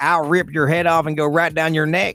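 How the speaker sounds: put-on hillbilly country accent. Podcaster imagining a man's threat, voicing him: hillbilly country accent. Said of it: "hillbilly voice that he does".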